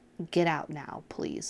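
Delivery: earnest, heartfelt pleading. Urging listeners in a bad relationship to leave: earnest pleading. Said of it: "I'm begging you".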